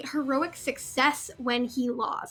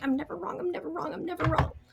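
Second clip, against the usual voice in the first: soft, repeated muttering under the breath; 4 dB quieter than usual. Narrating a character who hates being wrong as she starts mumbling to herself. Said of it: "she starts mumbling like".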